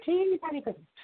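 very high villain cry.

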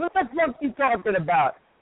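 Italian tough-guy wiseguy voice.

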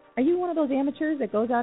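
playful teasing. Reading a limousine ad, teasing the listeners. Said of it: "I'm teasing you".

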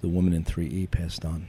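ordinary talk

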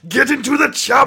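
bad action-star yell, high pitch, fast. Doing an Arnold Schwarzenegger impression after being begged: bad Arnold Schwarzenegger impression, yelled. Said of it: "That's not really good Arnold Schwarzenegger".

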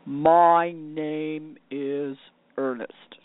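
grave, solemn, very serious voice, deep and very slow. Retelling how the new car said its name: imitating a very serious voice. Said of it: "I heard this very serious voice say".

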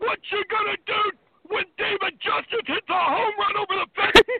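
yelling at high pitch and volume. Retelling yelling out at a baseball game: Hulk Hogan yell. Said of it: "I yelled like Hulk Hogan".

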